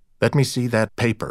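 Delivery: ordinary delivery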